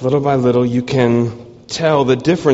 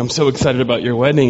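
ordinary talk

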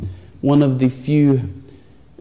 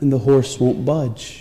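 ordinary delivery, nothing marked

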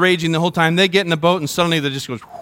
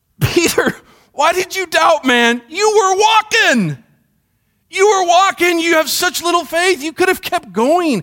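put-on, gently disappointed, let-down pleading, very high; 13 semitones higher than usual. Voicing Jesus speaking to Peter after Peter doubted: imitating Jesus, disappointed. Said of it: "Jesus just being disappointed for Peter's sake".

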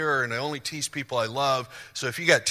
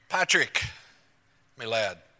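put-on Irish lilt, pitched lower; 3 semitones lower than usual. Thanking someone during a church service, in an irish lilt. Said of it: "You have to say Patrick with an Irish lilt".

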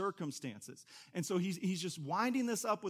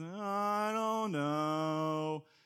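put-on gloomy donkey voice; 3 dB louder than usual. Reminding listeners of a cartoon character's attitude: Eeyore voice. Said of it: "You remember Eeyore?".

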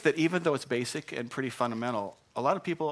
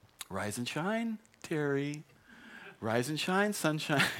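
tender, sweet, gentle, motherly voice; 2 semitones higher, 4 dB quieter than usual. Acting out your mother coming in to wake you up, imitating mother's sweet, gentle voice. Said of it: "She would come in with a sweet, gentle voice".

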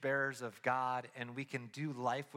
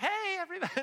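cheery voice pitched much higher. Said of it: "she's like".

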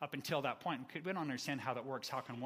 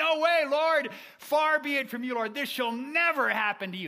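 shrill, very loud, high, drawn-out raised voice; 14 semitones higher, 16 dB louder than usual. Acting out Peter rebuking Jesus: raised voice. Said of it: "he says it with a raised voice".

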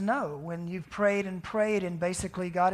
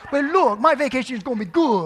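put-on very loud, high-pitched Cajun accent; 5 semitones higher, 9 dB louder than usual. Retelling what an elderly guest said after being prayed for: imitating a Cajun accent. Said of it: "this Cajun voice comes".

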